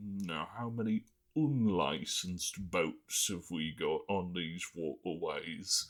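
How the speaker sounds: terrible, bad put-on British accent. Explaining british boat licensing, quoting the government in a horrible british accent. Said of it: "horrible British accent aside".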